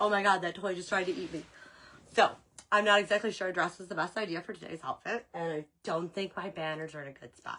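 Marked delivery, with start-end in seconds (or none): 0.0-1.4 put-on dog voice. Retelling how the dog reacted to a talking toy: voicing the dog's reaction. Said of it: "the dog was all like".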